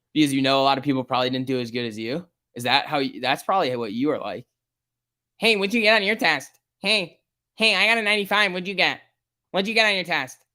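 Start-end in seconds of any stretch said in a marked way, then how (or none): 5.4-10.4 high, boastful, nagging, pestering show-off bragging. Mocking a chat viewer as a student who brags about test scores: mocking a show-off asking test scores. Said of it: "That's how you sound right now".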